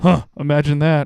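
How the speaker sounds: put-on muttering under the breath. Retelling what a guy near the stage said during a joke: imitating a mutter under the breath. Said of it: "under his breath".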